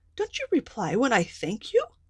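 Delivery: indignant, angry fairy cry with swooping pitch. Narrator reading a story, the fairy scolding a silent doll, angry cry. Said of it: "cried the angry fairy".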